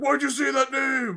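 shrill full-volume shout at very high pitch. Mocking a film's climactic fight, the speaker imitates Batman yelling. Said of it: "Batman just yelling at him like".

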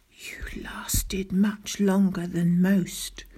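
soft whisper under the breath. A girl under the blanket speaks to Daisy, whispered. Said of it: "whispered the girl".

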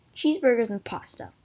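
plain reading voice

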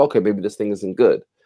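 ordinary delivery

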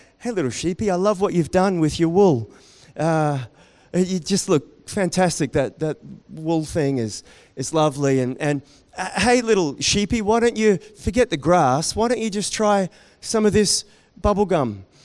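normal talking voice

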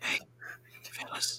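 quiet whispering. Sneaking with the party, not breaking stealth: whispering. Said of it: "can I whisper without breaking stealth?".

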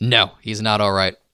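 ordinary delivery

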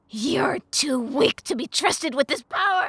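shrill, very loud screaming. Narrator reading the imp's line to the servant, screamed. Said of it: "The imp screamed".

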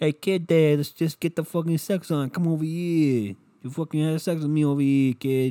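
put-on Boston and Brooklyn accent mashed together. Imitating a woman you are describing, in a Boston-Brooklyn accent. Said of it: "she's from Brooklyn and Boston".

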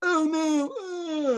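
high whimpering, crying.

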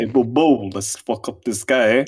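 loud cartoon bear voice in a Jersey accent. Picking up the joke about the bear from Jersey: Yogi Bear voice, Jersey accent. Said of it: "That's pretty good".

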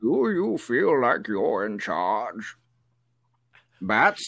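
menacing masked villain voice. Joking about a masked villain, a performer speaks in a Bane voice. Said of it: "That's a really good Bane".

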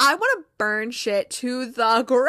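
plain

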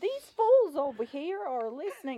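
high, very loud, accusing shout. Retelling how a woman accused them of eavesdropping, imitating her yelling. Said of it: "the way she was yelling".

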